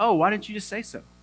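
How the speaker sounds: high voice speaking in English. Retelling a man's reply in english, imitating a man speaking english. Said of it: "that's what he sounded like in English".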